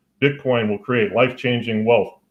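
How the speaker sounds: ordinary delivery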